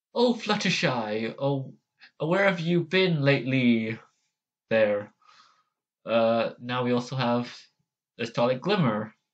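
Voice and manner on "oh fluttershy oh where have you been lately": put-on cartoon character voice. Trying out voices from a list, doing Discord's voice. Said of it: "a Discord?".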